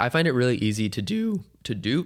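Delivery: voice cracking and breaking mid-phrase. Talking about long solo road trips, the speaker's voice cracks. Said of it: "there's the voice crack".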